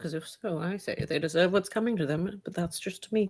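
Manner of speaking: low mutter under the breath, half to herself. Voicing a character who answers another character's story, muttering under her breath. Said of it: "Muttering under her breath".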